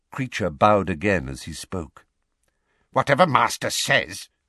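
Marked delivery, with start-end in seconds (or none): 2.9-4.2 seething, furious, grumbling mutter. Bowing again to his master, a servant replies, muttered furiously. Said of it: "he muttered furiously".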